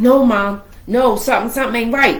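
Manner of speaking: ordinary talk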